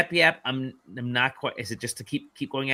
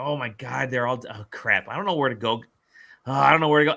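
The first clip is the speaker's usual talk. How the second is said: put-on upset, panicked voice. Retelling finding herself alone after everything went quiet: retelling being upset. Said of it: "I was all upset".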